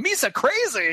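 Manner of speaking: high-pitched put-on English accent. Mocking a movie alien's speech, imitating Jar Jar. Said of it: "Jar Jar's running around with an English accent going".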